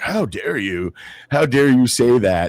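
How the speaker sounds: high, fake, played-up incredulous outrage. Retelling a TV interview, imitating Piers Morgan's fake incredulity. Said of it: "Pierce with his kind of fake incredulity".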